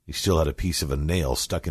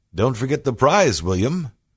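cheerful, very high, chiming, raised tone; 9 semitones higher, 6 dB louder than usual. Billy chimes in to William about the prize, in a happy tone. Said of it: "Billy chimed in with that happy tone of his".

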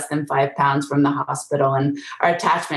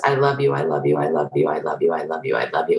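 imitated whisper, pitched lower; 11 semitones lower than usual. Retelling a mother holding her baby in a courtroom hallway: imitating a whisper. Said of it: "she just holds her and whispers".

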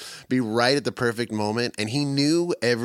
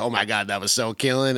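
put-on snickering muttered under the breath. Imitating Kofi snickering under his breath after playing: imitating Kofi snickering under his breath. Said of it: "snicker under his breath".

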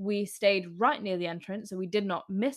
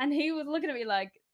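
ordinary talk, nothing marked

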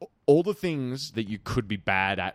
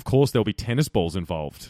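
ordinary delivery

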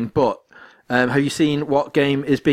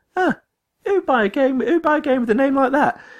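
very high, pitched-up put-on character voice; 13 semitones higher than usual. Describing a game trailer, quoting the character: Conker voice. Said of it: "the same voice of, of Conker".

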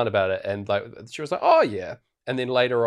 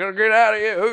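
acted-out, very high, shrill, loud shout; 12 semitones higher, 5 dB louder than usual. Retelling a film scene of yelling at the dog Hooch: imitating someone yelling. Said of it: "yelling at Hooch".

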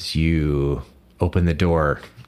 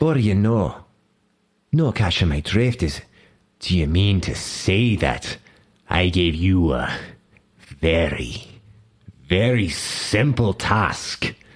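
put-on Scottish accent; 2 semitones higher than usual. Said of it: "my accent kinda wandered there".

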